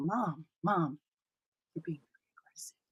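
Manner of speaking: quiet, whispered voice.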